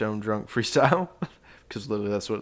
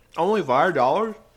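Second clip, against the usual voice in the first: high, loud, speaking through a mouthful while chewing; 6 semitones higher, 8 dB louder than usual. A podcast co-host reacts to the Patreon price: speaking with mouth full. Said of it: "Could barely hear you with your mouth full".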